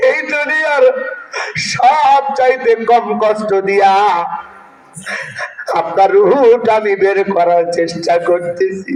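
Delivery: weeping, sermon-like crying delivery.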